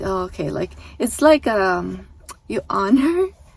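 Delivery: laughing through words. Describing a man's opponent softening on stage, the speaker laughs while speaking. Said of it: "I'm sorry, I'm laughing".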